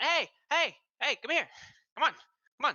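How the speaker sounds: very high, loud hollering call. Voicing a halfling waving and calling the heroes over: halfling calling out. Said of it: "calling out".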